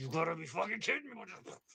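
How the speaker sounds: furious raging outburst, fully acted. Voicing a raging character picking up guts: raging in character. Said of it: "And I rage as I'm getting the Slurpee guts".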